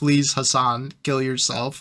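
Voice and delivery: put-on begging voice. Retelling what someone said in tweets: imitating someone begging. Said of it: "he literally was begging Hassan".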